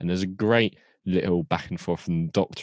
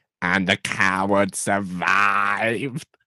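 flat, very slow, ground-out mechanical robot voice; 2 semitones higher, 3 dB louder than usual. Reading out a sent quote in a Dalek voice. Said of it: "This is my Dalek impression".

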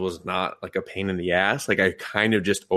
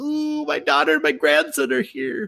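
put-on very high, fluttery, creaky teenage girl voice. Describing a gruff old man's inner monologue on a show, in a teenage girl voice. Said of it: "he's like a teenage girl".

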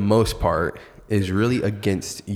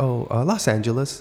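mock hesitant stutter, higher pitch; 4 semitones higher than usual. Retelling a woman's answer about where she's from, imitating her hesitant stutter. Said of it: "kind of stuttered a little bit, like hesitated".

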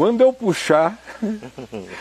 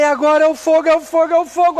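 put-on shrieking yell, very high and loud; 11 semitones higher, 5 dB louder than usual. Retelling what a man began to cry out: imitating someone shouting. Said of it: "Aí ele começou a gritar".

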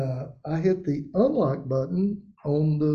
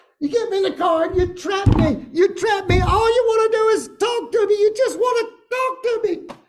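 put-on full-volume shriek, very high pitched; 6 dB louder than usual. Retelling your dad's outburst in the car, acting out him screaming at the top of his lungs. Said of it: "he is literally screaming at the top of his lungs".

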